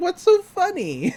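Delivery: high squeaky adolescent voice.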